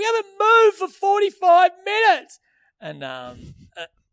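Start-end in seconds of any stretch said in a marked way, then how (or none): 0.0-2.4 shrill, very high, loud, sobbing, complaining wail. Retelling an old lady complaining about the delay, imitating her weeping. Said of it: "she's weeping, going".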